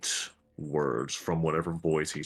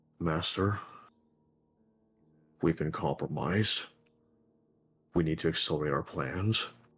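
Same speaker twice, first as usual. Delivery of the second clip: faint, barely audible spoken words. A storyteller voices words the players can only just make out: faint voice. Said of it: "you can just make out a few faint words".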